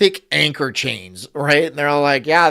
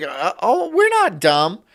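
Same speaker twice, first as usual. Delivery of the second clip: mocking mimicry, sing-song and drawn out; 4 semitones higher than usual. Imitating an imagined woman who objects: mocking imitation of a woman. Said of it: "if some bitch was like".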